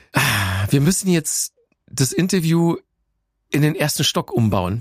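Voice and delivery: ordinary talk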